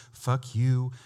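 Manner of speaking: mock gentle, meek tone. Joking about how the same driver would now say it: mock gentle, meek tone. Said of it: "as gentle and meek as can be".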